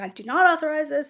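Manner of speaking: mild, low-key acted scream. Recounting being put in an ambulance, reenacting screaming at them. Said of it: "I was screaming at them the whole time".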